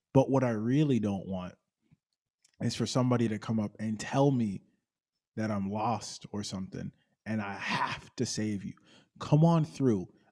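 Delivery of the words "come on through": put-on little childish voice, like a small child calling. Imitating people who invite the speaker to come over, in a childish voice. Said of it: "that childish voice whenever I imitate them".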